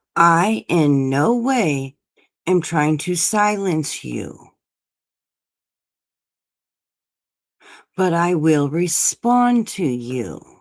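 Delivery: slow, drawn-out, deliberate, word-by-word delivery. Repeating a point to Ray Ray: saying it slower. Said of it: "do I need to say it slower for you?".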